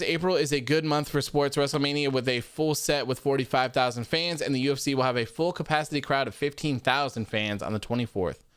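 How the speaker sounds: ordinary delivery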